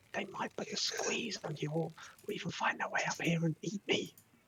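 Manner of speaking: loud hushed voice. Voicing a trapped character calling down for help: loud whisper. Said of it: "it's kind of like a loud whisper".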